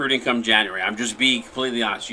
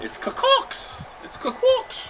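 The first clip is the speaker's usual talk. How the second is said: put-on thick-sounding local Boston accent; 4 dB quieter than usual. Saying a remembered web address out loud, in a boston accent. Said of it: "He sounds like I'm from Boston".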